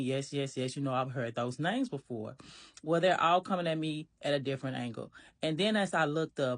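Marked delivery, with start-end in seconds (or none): none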